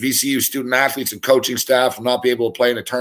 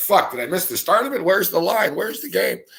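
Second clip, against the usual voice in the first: high, agitated, worked-up, put-on mad rant; 7 semitones higher than usual. Retelling searching the betting boards for a vanished game: retelling getting all mad. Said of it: "I'm getting all mad".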